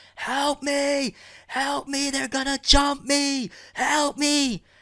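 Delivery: acted-out shrill scream, very high and very slow. Retelling how the rebound girl screamed for help: imitating someone screaming. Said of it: "rebound girl starts at that point really fucking screaming".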